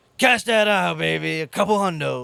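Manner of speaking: raspy, gravel-throated voice, rough and boastful. Retelling a man cashing out a winning ticket, imitating his gravelly voice. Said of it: "had like that gravelly voice".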